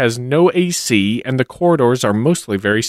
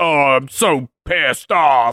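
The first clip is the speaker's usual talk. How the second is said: mocking, parodying put-on voice. Retelling what people write on Imgur: mocking imitation of Imgur users. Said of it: "you see it on Imgur where it's like".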